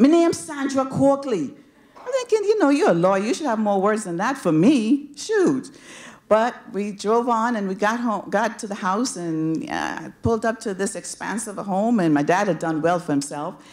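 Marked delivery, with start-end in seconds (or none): 0.0-1.5 put-on heavy, full-strength, thick Jamaican accent. Retelling introducing herself to a lawyer in the car: thick Jamaican accent. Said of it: "I had a really thick Jamaican accent".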